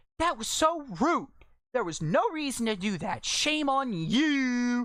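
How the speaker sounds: put-on shrill, high yell with drawn-out "you". Retelling a customer's angry outburst at the register: imitating a customer yelling. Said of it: "and she yells".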